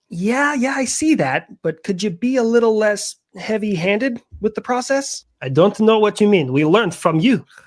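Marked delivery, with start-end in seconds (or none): 5.4-7.4 bad, weak, clumsy, unconvincing put-on Israeli accent. In a comedy sketch, a character replies to criticism; bad Israeli accent. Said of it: "we really got to work on that Israeli accent".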